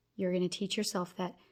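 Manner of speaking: plain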